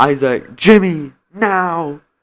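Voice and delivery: play-acted, really loud calling out. Retelling how a teacher walked into class and called out names: imitating a teacher's loud call. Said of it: "a really loud tone".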